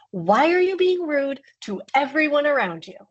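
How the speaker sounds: mock full-on scolding yell, high-pitched. Retelling yelling at a four-year-old on the way to school: retelling own yell. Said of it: "I was full yelling at my four-year-old".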